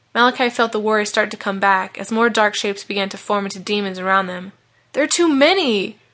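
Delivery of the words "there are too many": high, distressed cry of distress. Reading a story, a boy cries out as dark shapes form around him, in distress. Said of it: "cried Malachi in distress".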